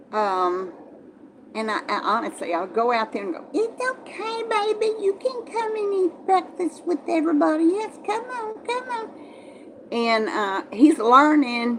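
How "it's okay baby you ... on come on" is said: very high, soft kitty cat voice. Coaxing him out to eat breakfast with everybody, kitty cat voice. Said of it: "I try to speak in my kitty cat voice".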